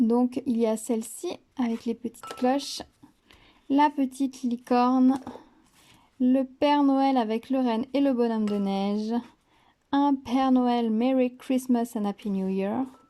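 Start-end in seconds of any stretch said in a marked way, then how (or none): 9.9-12.8 put-on English accent. Presenting a set of Christmas cards, reading a card's greeting, English accent. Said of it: "accent anglais du tonnerre".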